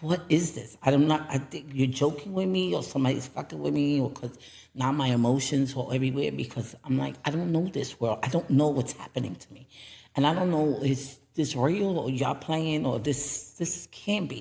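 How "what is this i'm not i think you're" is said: usual speaking voice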